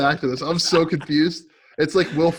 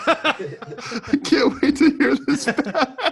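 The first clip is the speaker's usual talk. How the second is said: high, slow, demented cackling laugh. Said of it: "your laugh sounds demented".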